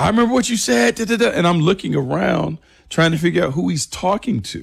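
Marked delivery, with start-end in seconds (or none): 0.0-1.3 mock screamed hollering, high-pitched. Retelling a player screaming at the speaker: imitating Earl Thomas screaming. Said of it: "He's screaming like".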